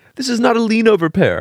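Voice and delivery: put-on very high little child's voice. Imagining a kid talking to their mommy, imitating a small child. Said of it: "and the kid's like".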